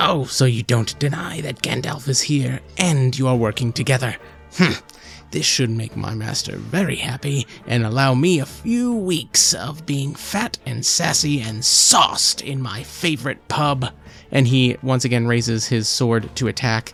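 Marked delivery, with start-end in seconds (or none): 0.0-13.9 put-on cackling character voice. Narrating a sword fight, voicing the opponent as he parries: cackling character voice. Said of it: "he cackles in that voice that I have chosen to give him".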